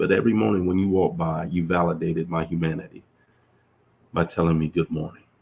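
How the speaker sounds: plain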